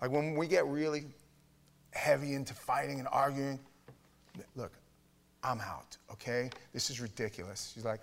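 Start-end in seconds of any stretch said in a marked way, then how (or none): 4.5-7.7 dismissive, brushing-off delivery. Retelling how the wife ends a heavy argument: imitating wife walking out. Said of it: "My wife is like".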